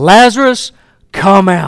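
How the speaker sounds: loud calling out in a strong voice. Retelling Jesus calling to Lazarus at the tomb, in a loud voice. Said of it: "says this in a loud voice".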